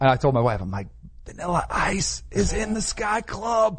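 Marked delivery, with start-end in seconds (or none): 1.3-3.8 very slow, drawn-out, hushed whispering murmur. Retelling telling his wife a celebrity was right nearby: retelling a whisper. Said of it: "I'm whispering because he was like right over there".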